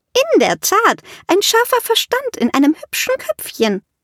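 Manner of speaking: spoken through giggles, very high, swooping. Narrator reading a woman's remark while others laugh, giggling.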